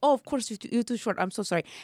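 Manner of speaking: imitated Italian accent. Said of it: "this accent impersonation".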